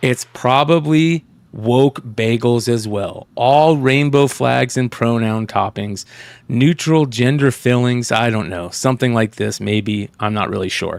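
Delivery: sarcastic delivery. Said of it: "I don't always love [name]'s sarcasm and his tone".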